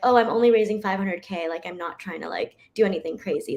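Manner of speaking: usual speaking voice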